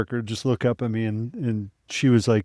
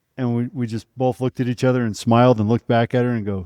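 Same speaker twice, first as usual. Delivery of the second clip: usual speaking voice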